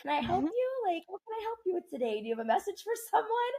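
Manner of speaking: very high, put-on customer-service tone. Showing how the speaker talks to a spirit, in a customer service voice. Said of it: "put my customer service voice on".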